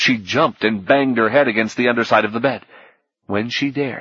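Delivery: plain reading voice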